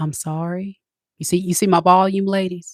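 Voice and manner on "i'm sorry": gentle, soft-spoken, quiet voice. Showing the ladies how to apologise, soft quiet voice. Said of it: "you say in a soft voice".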